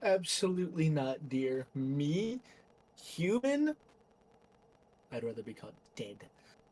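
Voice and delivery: laughing speech with swooping pitch. Voicing a woman who is asked if she is human: laughing while talking. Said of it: "as she's laughing".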